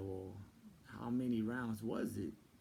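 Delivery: ordinary talk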